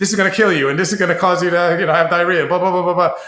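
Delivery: rapid patter. Describing how a colleague said he sounded: rattling off like a drug-ad disclaimer. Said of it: "rattle everything out real fast".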